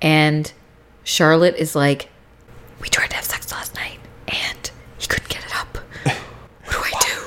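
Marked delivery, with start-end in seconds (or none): 2.8-7.2 secretive, hushed, breathy whisper. Speaker retelling a scene where one character talks to another at the back of a church, whispering. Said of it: "Why are you whispering?".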